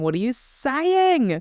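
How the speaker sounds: put-on very high-pitched screaming outburst. Describing a younger self's reaction, imitating younger self screaming. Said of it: "She's screaming at me going".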